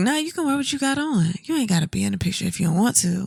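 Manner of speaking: seductive, flirtatious, sexy tone. Retelling what the partner said in a dream: imitating his flirty tone of voice. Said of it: "your tone of voice was like".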